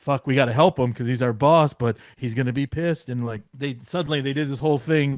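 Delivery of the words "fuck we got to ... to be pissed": loud, anxious, worried fretting. Retelling how the wrestler's two helpers reacted: imitating worried helpers. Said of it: "they were there all worried".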